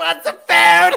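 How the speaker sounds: very loud, raspy, full-throated hollering. Telling a funny story, imitating what a woman yelled, retelling her yelling. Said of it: "She's yelling".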